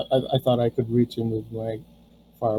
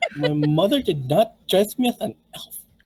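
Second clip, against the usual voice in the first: put-on high, swooping goblin voice in valley-girl style; 5 semitones higher than usual. Voicing an insulted goblin in a game: valley girl goblin voice. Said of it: "all goblins are valley girls".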